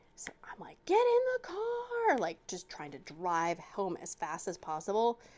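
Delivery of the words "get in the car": put-on very high, slow, drawn-out shout. Retelling calling the kids into the car from the window: imitating herself yelling. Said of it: "yelling out of the window".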